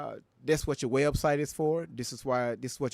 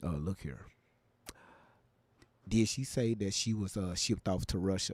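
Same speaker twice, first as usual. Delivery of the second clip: deliberately deeper, lower voice, much slower; 6 semitones lower, 4 dB quieter than usual. Asking listeners not to tell anybody, saying this real low in a deeper voice. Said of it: "I'm gonna let my voice get a little deeper".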